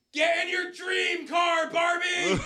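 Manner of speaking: shout. Retelling what was yelled at a slow runner during a game: retelling own yell. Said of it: "and I just yell".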